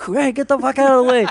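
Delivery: put-on aggressive New York shouting. Imitating the loud city sounds someone sleeps to: imitating a loud aggressive New Yorker. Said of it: "loud, aggressive New York City sounds".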